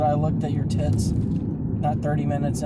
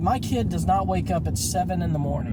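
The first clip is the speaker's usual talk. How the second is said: normal talking voice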